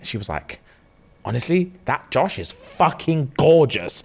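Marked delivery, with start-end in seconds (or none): 1.3-4.0 slow, passionate, gushing delivery. Retelling a wife's answer to the cameraman: imitating a passionate remark. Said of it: "You said it with passion".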